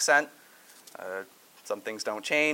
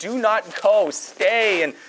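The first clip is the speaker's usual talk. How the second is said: very slow, drawn-out, high, loud tearful crying; 7 semitones higher, 5 dB louder than usual. Retelling how a mother pleaded with her son not to go, imitating her crying. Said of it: "She's crying".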